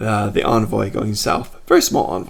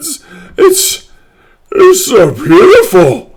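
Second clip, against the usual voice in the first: very high, very loud, tearful ogre voice; 12 dB louder than usual. Voicing an ogre receiving a gift, moved to tears: ogre moved to tears. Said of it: "tears start flowing in this big old ogre's eyes".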